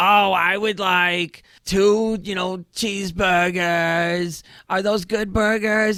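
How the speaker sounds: cheesy, corny, obnoxious put-on voice. Retelling how he ordered at McDonald's to mess with the cashier, cheesy obnoxious put-on voice. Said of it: "this cheesy voice, this obnoxious voice".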